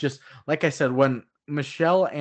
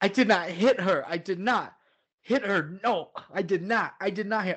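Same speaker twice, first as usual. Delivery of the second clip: mock distraught outburst, higher pitch; 6 semitones higher than usual. Quoting a film character's breakdown on a roof: imitating an emotional breakdown. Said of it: "Mark's having an emotional breakdown on the roof".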